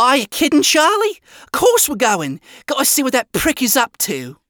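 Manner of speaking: high, called out yell. Cherry answers Charlie from across the room, yelled. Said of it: "Cherry yelled from across the room".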